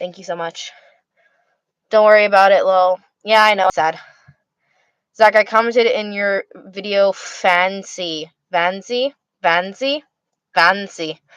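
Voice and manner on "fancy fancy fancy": German-sounding pronunciation, quieter and slower. Reading out a word from a viewer's comment, with German-sounding pronunciation. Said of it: "the way I say that, it sounds like German".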